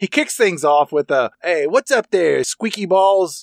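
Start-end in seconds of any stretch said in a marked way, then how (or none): 1.4-3.4 pitched-up, tossed-off delivery. Retelling a movie phone call line: imitating the Frank Rizzo voice. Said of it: "doing his Frank Rizzo voice".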